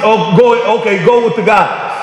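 ordinary talk

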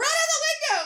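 horror-movie panic, rattled off, rushed and rising. Retelling a panic in a car, telling someone to open the windows: imitating own panicked scream. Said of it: "I screamed".

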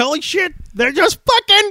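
high, loud giggling delivery. Retell his moment on a morning show, imitating Bill Burr giggling. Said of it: "He starts giggling like Bill Burr".

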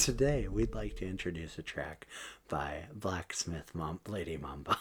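calm, quiet public radio voice. Asked whether they have the NPR voice, a speaker shows it: NPR announcer voice. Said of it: "that sounds like an NPR band".

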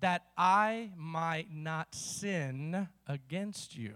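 very slow, very low, word by word, "sin" stretched. Reading a scripture verse aloud to listeners, saying it really slowly. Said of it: "I'm going to say this real slowly".

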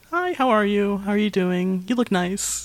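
put-on sugary kind voice. Describing a character's manner at first: imitating a sweet neighbor. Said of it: "very kind of sweet".

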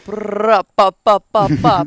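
put-on Jamaican voice. Retelling impersonations heard in the head: imitating a put-on Jamaican voice. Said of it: "impersonations of a Jamaican voice".

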